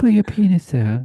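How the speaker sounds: lukewarm, unenthused delivery. Re-saying a joke line about bored pilots: imitating a tepid voice. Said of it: "in a tepid voice".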